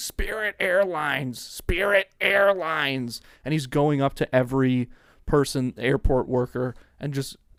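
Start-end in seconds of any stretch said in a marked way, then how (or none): 0.0-3.2 mock stretched-out calling, screaming like a man. Retelling how a man in the airport kept screaming: imitating a man screaming. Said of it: "he's just screaming".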